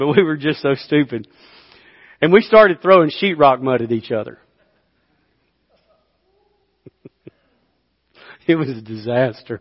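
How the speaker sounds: words broken by laughter throughout. Recalling throwing sheetrock mud with Monty on a job, laughing while speaking. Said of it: "I'm sorry I'm laughing".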